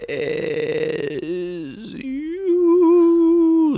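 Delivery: very high, swooping spectral ghost voice. Finishing a co-host's sign-off line as a ghost: ghost impression. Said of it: "That was my impression of a ghost".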